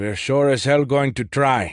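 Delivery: mild irritation, note of annoyance showing through. A man insists on trying despite a colleague's doubts: note of annoyance. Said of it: "a note of annoyance in his voice".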